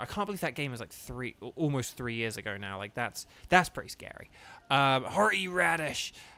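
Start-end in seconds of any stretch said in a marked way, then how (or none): 5.0-6.1 cartoon country voice, higher. Talking about a game's new content, the speaker says a name in a country Rick voice. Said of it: "that voice I just did".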